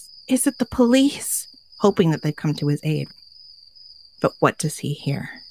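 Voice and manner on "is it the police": high, shaky, mock trembling, scared voice. Storyteller voicing a man calling through a barely opened door, shaky voice. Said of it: "he says in a shaky voice".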